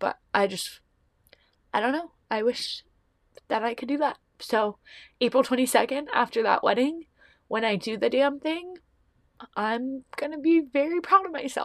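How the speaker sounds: talking through tears. Talking about friends who took leaps of faith, crying. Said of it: "I'm sorry that I'm crying".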